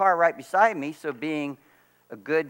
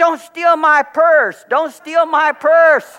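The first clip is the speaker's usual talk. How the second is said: high, loud, drawn-out yell; 13 semitones higher, 11 dB louder than usual. Retelling a woman in the Aldi's parking lot accusing him, imitating a woman yelling. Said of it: "She starts yelling".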